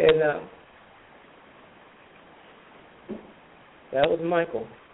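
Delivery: struggling to stay composed. Finishing a story about a man, the speaker is trying to keep it together. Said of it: "I'm trying to keep it together here".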